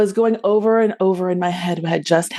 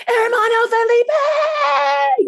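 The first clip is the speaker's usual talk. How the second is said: mock very high yell at the top of lungs. Retelling holding a door shut, yelling for help: retelling a yell at the top of lungs. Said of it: "yelling at the top of my lungs".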